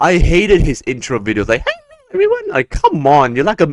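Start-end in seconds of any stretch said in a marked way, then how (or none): 1.6-2.5 very high, squeaky cartoon mouse voice. Mocking a YouTuber's intro videos, Tyler Oakley intro impression. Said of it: "you sound like Mickey Mouse".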